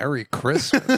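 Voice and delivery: mocking, ironic, sarcastic tone. Retelling a remark made after a movie preview went quiet: retelling own sarcastic remark. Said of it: "it's the sarcastic Merry Christmas".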